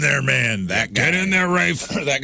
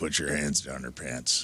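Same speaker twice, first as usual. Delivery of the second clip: put-on bass voice, very low and deep; 8 semitones lower, 11 dB quieter than usual. Retelling what an older, linebacker-built kid told them: imitating a deep voice. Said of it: "Like, deep voice".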